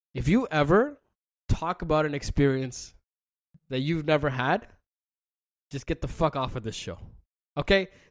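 grave, stern, dead serious, no-nonsense tone. Host addressing the listeners of his show, in a serious tone. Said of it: "I gotta take a serious tone for this".

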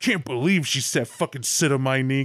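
put-on, fake outraged angry voice. Retelling own staged performance after leaving, imitating own fake outrage. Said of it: "faking my ass off that I hated this scenario".

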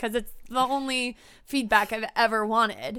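normal talking voice

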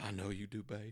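unbothered, even, really calm and easy tone. Retelling how a man answered a woman's declaration of love, imitating him saying it calmly. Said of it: "he says all really calm".

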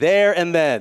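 loud, slow, emphatic delivery. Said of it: "Say it like you mean it".

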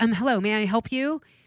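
loud, sassy, aggressive, pushy delivery. Retelling how a woman greeted her at a house: imitating a sassy woman. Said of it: "she's really sassy, like, kind of aggressively coming at me".

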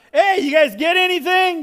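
high, loud, far-carrying yell. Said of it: "he yells out".

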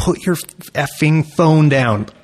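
vicious, heckling screaming. Retelling what the photographers yelled at a girl: imitating someone screaming. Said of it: "They were just screaming".

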